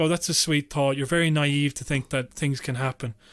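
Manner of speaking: ordinary delivery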